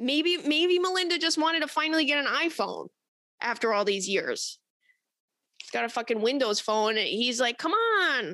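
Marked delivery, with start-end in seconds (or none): 7.6-8.3 put-on higher frog puppet voice. Acting out a quoted line: Bill Gates impression. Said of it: "That's my Bill Gates impression".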